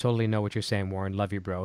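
ordinary delivery

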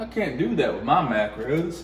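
ordinary talk, nothing marked

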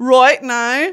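Northern Irish accent. Showing how she pronounces the phrase, in a Northern Irish accent. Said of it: "She's Northern Irish".

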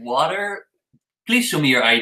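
ordinary talk, nothing marked

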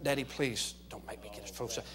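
very hushed, pleading, begging whisper. A father acts out what his son said to him, imitating his son's whisper. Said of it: "he's whispering".

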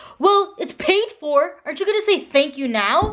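put-on aggressive voice. Retelling what a partner said after paying, imitating his aggressive voice. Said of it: "That is not how I sound".

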